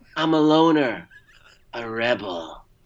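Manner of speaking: slow, deliberate, each phrase dragged out. Quoting a line from the movie to the other speaker: Pee-wee Herman voice. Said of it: "if you're channeling Pee-wee".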